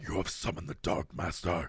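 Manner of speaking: whispered demon voice. Pretending a demon speaks through them at an exorcism: Doctor Claw demon voice. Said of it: "You sound like Doctor Claw from Inspector Gadget".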